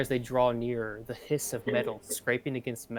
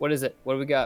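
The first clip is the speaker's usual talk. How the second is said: groggy, half-asleep, just-woken, raised voice; 5 dB louder than usual. Voicing a character rubbing his eyes on being woken: half asleep. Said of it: "rubs his eyes, half asleep".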